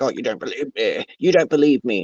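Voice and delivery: agitated, worked up, upset tone. Recapping a story, acting out a man who gets upset: acting out someone getting upset. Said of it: "he's getting all upset because he's like".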